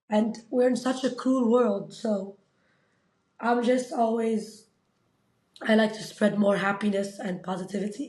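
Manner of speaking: words coming out through tears, crying while talking. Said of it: "I don't know why I'm crying".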